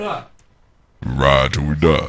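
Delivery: deep, very slow, dragged-out bored delivery. Mocking a car-jumping movie scene, Vin Diesel monotone impression. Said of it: "that same old boring monotone voice".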